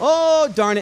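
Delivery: put-on nice little Canadian-accented voice. Retelling a story, quoting an eighty-to-ninety-year-old lady, nice little Canadian voice. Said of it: "in this nice little Canadian voice".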